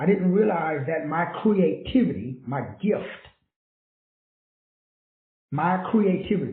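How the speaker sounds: slow, measured, deliberate, unhurried delivery. Speaker slows down so the audience can process the point, speaking slowly. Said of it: "I gotta say this slowly".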